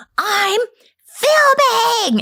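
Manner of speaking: awful shrill screech, very high pitched. Retelling a mother yelling at her noisy family: imitating a god-awful scream. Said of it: "screams in this god-awful scream".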